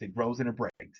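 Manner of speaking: quiet soft delivery.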